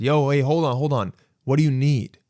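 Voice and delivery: ordinary talk, nothing marked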